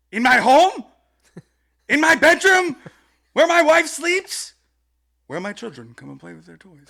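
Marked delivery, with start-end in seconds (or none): 0.1-5.5 sudden, very loud, very high, shrill swooping yell. Reading aloud the other speaker's favorite line, retelling a sudden shout. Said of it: "he just starts off right at the top".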